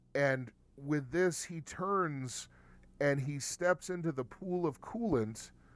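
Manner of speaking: normal talking voice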